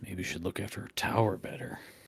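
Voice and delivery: muttered under the breath. A tabletop player's character speaks to the others, muttered under breath. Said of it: "I'll kind of say under my breath".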